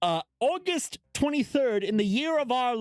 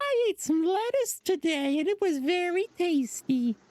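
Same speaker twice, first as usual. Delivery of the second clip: high clichéd woman voice; 7 semitones higher than usual. A prosecutor reads entries from Miss Cosign's diary, in a stereotypical woman voice. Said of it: "giving her a stereotypical woman voice".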